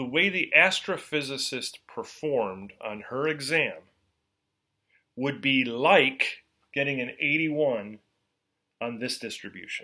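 slow, measured, careful, deliberate teaching delivery. Explaining where a z-score result falls on a distribution, speaking slowly. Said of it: "I'm going to say this slowly here".

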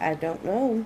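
plain

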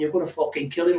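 put-on shouted outburst with swearing. Speaker retelling what they shouted while a man was being attacked: retelling their own shout. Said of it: "That was the word I was shouting".

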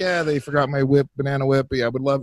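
nice, easygoing, friendly and polite voice. Acting out how the complaint call should go: imitating a friendly complaint call. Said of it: "I should call 'em up friendly".

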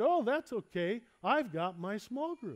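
put-on chipper, easygoing, cheery, upbeat tone. Retelling a church member's phone reply: imitating a cheery voice. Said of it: "in a cheery voice".

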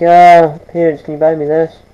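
ordinary talk, nothing marked

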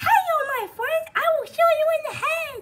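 squeaked up high, puppet-like. Asked how they sound like Elmo, the speaker shows it: Elmo voice. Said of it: "This is what sounds like Elmo".

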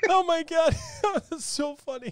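laughing hard, high squealing giggle.

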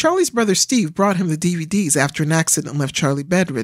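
plain

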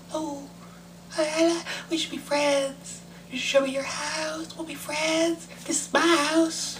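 weird tiny voice, very high and soft. Playing with voices after an odd one slipped out: weird little voice. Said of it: "That was a weird little voice that just came out of my voice".

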